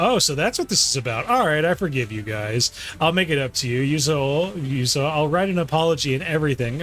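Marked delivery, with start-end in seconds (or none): none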